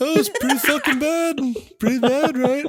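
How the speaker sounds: British accent, pitched very high. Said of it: "I was gonna go to the Beatles".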